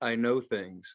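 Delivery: low, soft, close and confidential murmur. Retelling what a woman said into the speaker's ear, in a low voice. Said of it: "in a low voice".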